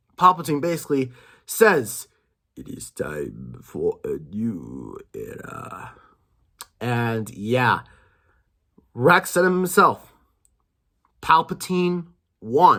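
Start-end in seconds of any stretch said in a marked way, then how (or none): 2.6-6.0 very slow, breathy whisper, lingering on "new". Recapping a scene, quoting its last line: Palpatine voice. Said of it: "I'm gonna do the voice for this last part here".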